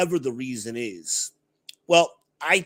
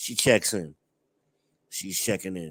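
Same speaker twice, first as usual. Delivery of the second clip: normal talking voice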